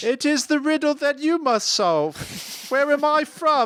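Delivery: very high, fake, somewhat British accent. Playfully refusing to say where they're from, in a put-on shifting mystery accent. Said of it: "Did my accent change several times there?".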